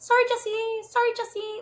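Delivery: put-on light French accent, pitched very high. Imitating a player apologizing to his partner: Jay's French accent. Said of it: "In his little French a-, accent".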